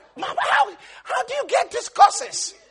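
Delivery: amused, high-pitched voice. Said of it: "I'd be like".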